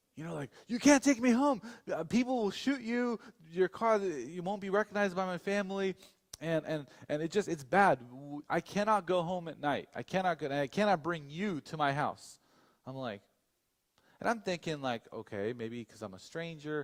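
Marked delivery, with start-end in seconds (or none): 0.7-12.4 anxious, desperate pleading, pitched up. Retelling how a man started panicking: imitating someone panicking. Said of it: "he starts panicking".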